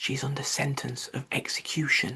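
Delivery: hushed, close whisper. The Rabbit puts his mouth close to Alice's ear to answer her, whispering. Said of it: "put his mouth close to her ear, and whispered".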